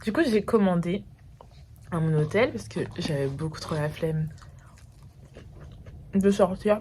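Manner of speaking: speaking with a mouth full of food. Eating a sandwich ordered to her hotel while talking, talking while eating. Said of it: "Désolée, parler en mangeant, c'est mal poli".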